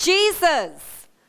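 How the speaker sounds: high-pitched, loud, desperate crying out.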